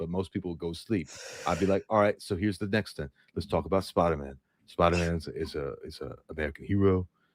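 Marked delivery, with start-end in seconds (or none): 1.9-7.1 very deep, natural everyday talking voice. Showing how their normal voice sounds, naturally deep voice. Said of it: "it'd be sound like this".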